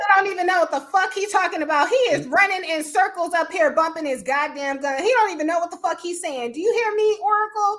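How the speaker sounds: high, heated yelling, loud over others. Addressing oracle about a man, yelling. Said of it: "I'm thinking you're yelling".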